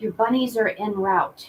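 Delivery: hushed, whispering voice. Telling another speaker the bunnies are on their way: whispering. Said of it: "Why are we whispering?".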